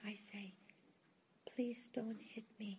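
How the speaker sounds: very quiet, soft, hushed small voice. Retelling what a man who was being hit says he says, imitating a very soft voice. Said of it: "he said with a very soft voice".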